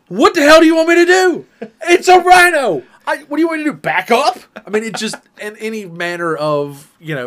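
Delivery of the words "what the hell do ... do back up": very loud, shrill, high-pitched, exasperated, fed-up yell. Retelling a video's reply to the yelling lady: imitating an exasperated reply. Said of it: "somebody else going".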